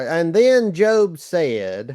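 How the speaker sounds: very slow, stretched-out Southern accent. Offering to read scripture aloud in a Southern vernacular: Southern vernacular. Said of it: "I'll read it in my Southern vernacular".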